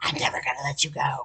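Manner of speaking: sinister, menacing, breathy whisper. Retelling what a man said after jerking her out the window: imitating a whisper. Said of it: "or whispers some evil shit".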